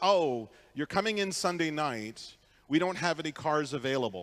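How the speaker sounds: plain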